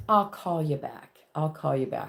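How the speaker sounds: put-on British accent. Speaker quotes their mom, imitating mom's British accent. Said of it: "with her British accent".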